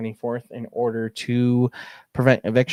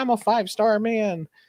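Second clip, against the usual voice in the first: put-on very high, unhinged, stretched-out, freaked-out shouting; 11 semitones higher than usual. Describing an Always Sunny episode, the speaker quotes Dennis at the bar: Dennis yelling, freaking out. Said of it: "He's yelling at them at the bar".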